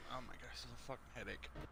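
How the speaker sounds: beaten-down, worn-out, very hushed soft mutter. Reacting to a frustrating fight with a headache: sounding defeated. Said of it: "You sound so defeated in that".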